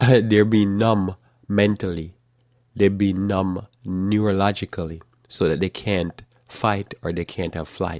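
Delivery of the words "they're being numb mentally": loud voice, laughing through the words. Picturing people sitting around numbed, laughing while talking. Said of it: "I'm laughing because I can see it in my mind".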